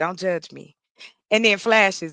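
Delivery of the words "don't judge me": soft, hushed, voiced half-whisper, secretive tone. Retelling what an online date said into the camera: imitating a half-whisper. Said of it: "he whispers and into the camera and go".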